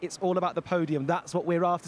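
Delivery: ordinary talk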